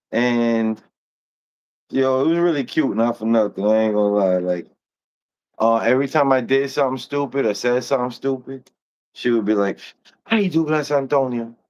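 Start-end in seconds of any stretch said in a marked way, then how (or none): 10.2-11.5 put-on high, thick, heavy Colombian Spanish accent. Recalling what she would say whenever he did something stupid, heavy colombian accent. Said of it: "from Colombia with like a heavy accent".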